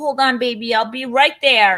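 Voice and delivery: high, loud, really concerned, worried shout. Retelling a movie scene where he calls to her: imitating a concerned scream. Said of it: "he screams, like, he's really concerned".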